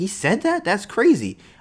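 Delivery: high voice full of shocked disbelief. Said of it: "I'm like".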